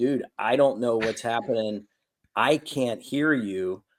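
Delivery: ordinary talk, nothing marked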